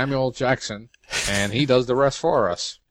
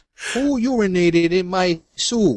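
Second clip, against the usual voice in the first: poor put-on Brooklyn accent, high-pitched; 7 semitones higher, 4 dB louder than usual. Acting out the guy who goes bam as he sips soup, in a poor Brooklyn accent. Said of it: "That was a poor Brooklyn accent".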